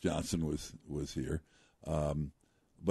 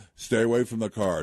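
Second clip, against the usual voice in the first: put-on commanding voice, louder and higher; 6 semitones higher, 6 dB louder than usual. Retelling how a man threatened them when they confronted him, imitating a command voice. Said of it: "He had a command voice".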